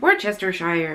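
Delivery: Worcestershire said with a West Country accent. Musing on how Worcestershire sauce is pronounced, West Country accent on Worcestershire. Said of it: "I have to say it in like a West Country accent".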